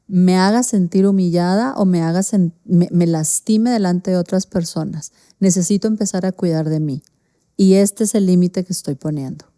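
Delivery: ordinary talk, nothing marked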